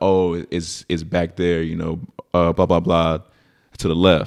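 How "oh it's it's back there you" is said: usual speaking voice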